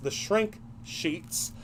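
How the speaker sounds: slow, careful, deliberate "shrink sheets". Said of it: "Try to say that three times fast".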